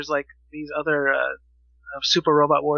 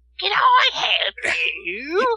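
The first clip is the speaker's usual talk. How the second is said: very high, squeaky, very slow, stretched-out annoying voice; 12 semitones higher, 3 dB louder than usual. Recalling a game's shopkeeper to friends, in an annoying Star Fox Adventures shopkeeper voice. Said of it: "the most annoying voice ever".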